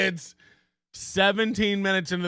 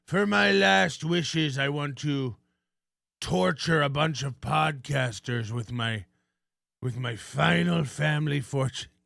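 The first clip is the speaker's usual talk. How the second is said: put-on dying old man voice; 3 semitones lower than usual. Imagining a rich donor's last wishes on his deathbed: dying old man voice. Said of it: "a really old man, like the Monopoly guy, on his deathbed, and he's like".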